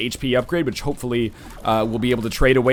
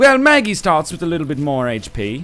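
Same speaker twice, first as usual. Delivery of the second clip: put-on, lofty, high-minded upper-crust posh accent; 3 semitones higher than usual. Speaker turns the tables with a put-on accent: posh, high-minded accent. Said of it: "posh, high-minded accent".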